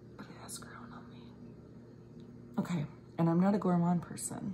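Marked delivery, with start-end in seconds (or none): 0.2-1.2 very quiet, fast, hushed whisper. Smelling a scent you really like, whispering. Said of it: "I don't know why I'm whispering".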